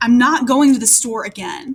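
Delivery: irritated, cross, angry, fed-up tone. Showing how tone changes what you say, in an angry tone. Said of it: "Or with an angry tone".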